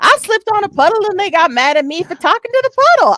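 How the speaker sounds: very high-pitched put-on Southern US accent. Retelling a funny remark someone made: imitating a Southern accent. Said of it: "she said it in, like, the Southern accent".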